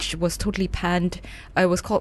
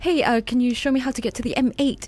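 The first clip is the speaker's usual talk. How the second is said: fake London accent, raised pitch; 5 semitones higher than usual. Retelling Scarlett Johansson driving around Glasgow and asking people the way, in her very London accent. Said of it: "in this very London accent".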